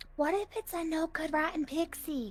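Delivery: quiet, high, soft character voice. Role-playing, the speaker as Delphi turns to Timothy, very soft voice. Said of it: "It was a very soft voice".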